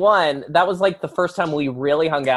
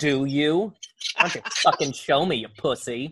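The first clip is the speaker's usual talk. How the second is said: mock challenging tone, quieter; 5 dB quieter than usual. Echoing the other speaker's question back as if it were a dare: mock challenging. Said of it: "like it was a challenge".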